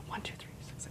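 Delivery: very soft whisper, barely voiced. Showing how people rehearse information in their head, whispered numbers. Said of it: "you actually whisper the information like".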